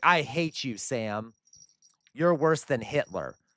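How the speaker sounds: put-on, drawn-out, mild ranting yell. Predicting what Elevator Lady will say to him: imitating Elevator Lady yelling. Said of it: "yell at me for no reason".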